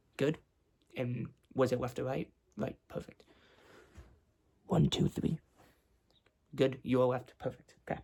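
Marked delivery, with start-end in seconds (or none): 4.7-5.4 loud, projected whisper. Testing hearing by saying letters into one ear: whispering. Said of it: "I'm just gonna whisper letters and numbers".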